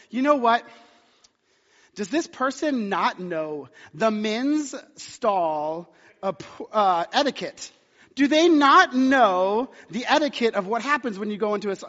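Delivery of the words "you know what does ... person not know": plain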